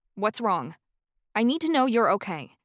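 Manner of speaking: insistent, demanding tone. Reading a story aloud, a character presses a crying professor: demanding. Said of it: "I demanded".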